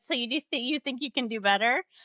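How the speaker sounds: put-on Louisiana accent. Quoting a woman dear to them, imitating a Louisiana accent. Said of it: "Louisiana accent".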